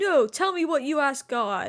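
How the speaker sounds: mock insistent, demanding, berating yell. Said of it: "yelling at her".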